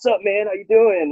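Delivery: mock light teasing tone, very high and playful. Retelling walking over to greet a friend: retelling a playful greeting. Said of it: "joking, like, playful walk over".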